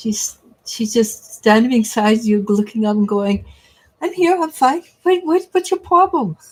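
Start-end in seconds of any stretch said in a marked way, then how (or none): 4.0-6.4 high, pitched-up dog voice. Answering someone asking about her late dog: voicing Lily the dog. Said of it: "narr- narrate our dogs' voices".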